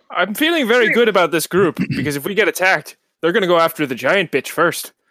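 put-on Irish accent. A giant forest-creature character sizes up the group, in an Irish accent. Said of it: "Is that your Irish accent?".

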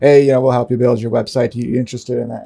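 mock flat monotone, like reading a script. Describing cold callers who read from a script: mock monotone scripted caller. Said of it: "kind of monotone, you can tell they're reading from a script".

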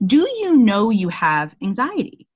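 true Southern drawl, slow, drawn out and swooping. Retelling her therapist asking about anxiety, imitating Southern manner. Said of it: "in true Southern way".

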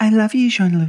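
put-on female American accent. Closing a Trek FM episode, a host signs off in a random female American accent. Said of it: "Who are you impersonating?".

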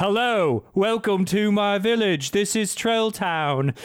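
slow put-on British accent, elf voice. Speaker retells a british christmas elf greeting visitors to his village, british christmas elf voice. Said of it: "there's a British Christmas elf".

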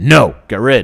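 loud, primitive caveman speech. Speaker voicing the inner caveman who decides right away, in a caveman voice. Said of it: "So use the caveman voice".

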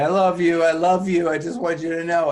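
awkward, high-pitched, loud voice.

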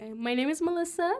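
customer service voice. A guest introducing herself when asked for her name, customer service voice. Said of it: "It's your customer service voice".

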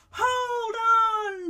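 high storybook-style yell, "on" drawn out. A narrator reading a story voices Jemima holding onto the dragon's tail, yelling. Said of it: "Jemima yelled".

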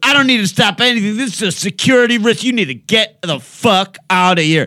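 very high, shrill, screeching scream. Recounting a girl ordering the speaker to get out, retelling a girl screaming. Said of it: "she's just this screaming wench".

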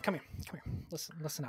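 hushed, quiet voice.

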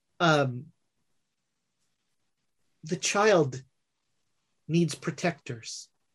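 quiet voice. Narrating a man who pulls you on stage, arm around you: quiet voice. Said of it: "in the same quiet voice".

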